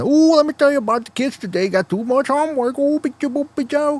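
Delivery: very high-pitched, mocking, put-on fake accent. Imagining a video's speaker at a PTA meeting: imitating a put-on accent. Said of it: "He doesn't talk that way".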